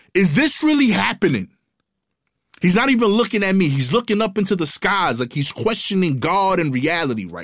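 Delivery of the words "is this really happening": put-on yelling, much higher pitch. Retelling how he walked over and started yelling, imitating his yell. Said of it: "he just starts yelling".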